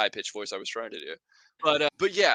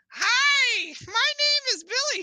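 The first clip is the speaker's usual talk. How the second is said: very high, very slow, grating, irritating voice; 5 dB louder than usual. Explaining which voices got actors out of a job, in a really annoying grating voice. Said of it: "like this really annoying or irritating or grating voice".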